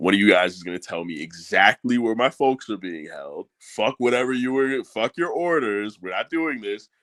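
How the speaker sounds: put-on, menacing, threatening delivery. Reading out a comic character's threats to captors: acted threatening tone. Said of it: "he starts going off with his threats".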